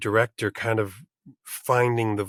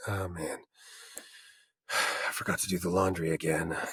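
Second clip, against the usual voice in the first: low gravelly put-on voice, lower and quieter; 4 semitones lower, 8 dB quieter than usual. Showing how he slips into it talking to himself at home: Geralt voice. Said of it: "suddenly Geralt's in the room".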